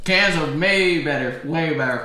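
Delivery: high voice talking through a mouthful of food. Munching during a podcast episode with a co-host, talking with mouth full. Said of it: "because I'm munching".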